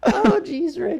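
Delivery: very high, loud cry, blurted out. Trying out voices, a speaker attempts a Morty line: Morty voice. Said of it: "kind of sounds like Morty. I can't do a Morty voice".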